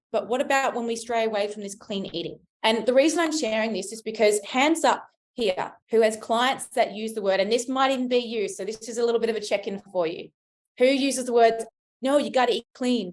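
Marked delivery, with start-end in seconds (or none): 12.0-13.1 put-on North American accent. Quoting what some say to clients to eat clean: put-on american accent. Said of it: "in the American accent and Canadian accent".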